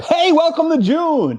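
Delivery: very high-pitched, pumped-up, energetic voice. Podcast panelist answers the host's opening question, bringing the energy up. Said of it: "I'll bring the energy up".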